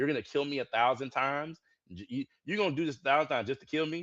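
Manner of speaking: put-on freak-out rant. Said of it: "He was freaking out".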